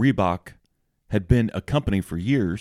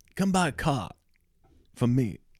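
put-on Boston accent, higher; 5 semitones higher, 4 dB quieter than usual. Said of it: "Is that supposed to be a Boston accent?".

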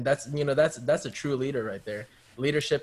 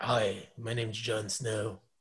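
slow, deliberate, drawn-out, brooding put-on character voice; 2 semitones lower, 5 dB quieter than usual. Doing a quick Jon Snow impression for friends: Jon Snow impression. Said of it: "you sound like Drew McIntyre".

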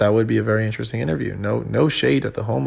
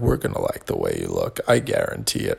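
put-on commercial spokesman voice, ad pitchman style; 3 dB quieter than usual. Joking about sounding tired, imitating the Men's Warehouse guy voice. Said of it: "I'm talking like the Men's Warehouse guy".

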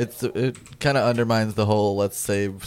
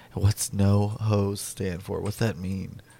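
put-on whispering voice. Retelling how a coworker asked a question: imitating a coworker whispering. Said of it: "and then he whispers to me".

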